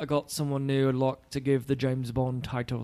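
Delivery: bad put-on British accent. Imagining the film's ending, voicing the retiring spy: offensive British accent. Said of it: "an awesomely offensive, uh, accent".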